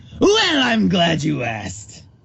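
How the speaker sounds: creaky, raspy villain voice with swooping pitch. After being asked to do the Joker, Joker voice. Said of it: "[name], do the Joker".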